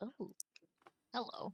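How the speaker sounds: hushed, barely whispered muttering under the breath. A character checking the rooms comes upon a sleeping goblin, muttering. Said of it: "just muttering like".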